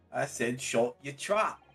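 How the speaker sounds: acted, put-on British accent. Reading a scripted line in a group scene: put-on accent. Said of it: "Good accent".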